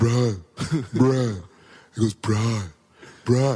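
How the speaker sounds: put-on deep flat voice. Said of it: "his voice is just Shacky".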